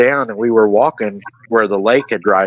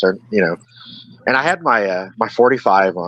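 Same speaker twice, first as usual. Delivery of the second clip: ordinary delivery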